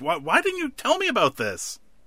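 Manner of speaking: put-on angry yell. Retelling an episode where a doctor yells at another doctor, retelling an angry yell. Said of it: "yelling at the other doctor".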